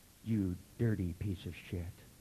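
low, sultry, seductive voice. Demonstrating delivering insults in the sexiest voice you've ever heard: sexy voice. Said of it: "turn the volume way down and then turn it back up in the sexiest voice you've ever heard. So it'll go".

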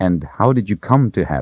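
ordinary delivery, nothing marked

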